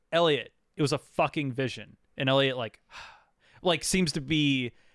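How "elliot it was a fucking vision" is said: ordinary talk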